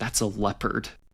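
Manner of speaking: hushed stage whisper. Recounting what he half-whispered to the speaker while they sat waiting: retelling a half-whisper. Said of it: "he whispers to me".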